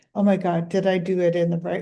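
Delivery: ordinary delivery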